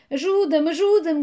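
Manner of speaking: high, loud, desperate, terrified shout. Nicolai, lying face down in the snow, calls to three figures, shouting. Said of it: "gritou Nicolai".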